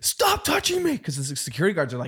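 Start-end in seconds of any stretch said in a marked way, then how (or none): 0.0-1.0 very high, shrieking scream. Retelling how a woman reacted to security guards: imitating someone screaming. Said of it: "She started screaming".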